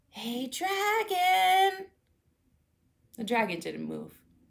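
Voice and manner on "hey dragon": soft whisper, higher pitch. Elizabeth tries to wake the sleeping dragon, whispering softly. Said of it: "Elizabeth whispered softly".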